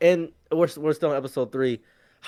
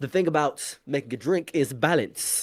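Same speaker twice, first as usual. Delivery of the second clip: put-on British accent, quieter; 5 dB quieter than usual. Retelling a live-action scene where Sanji makes drinks: Sanji's British accent. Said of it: "in his, you know, British accent".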